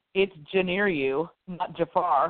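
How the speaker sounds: ordinary talk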